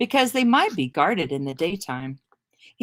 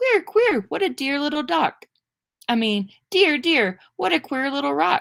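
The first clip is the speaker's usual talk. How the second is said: tiny, high-pitched, funny little mouse voice; 9 semitones higher than usual. A mouse rubs its paw on a sleeping man's knapsack and speaks in a funny little mouse voice. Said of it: "funny little voice saying".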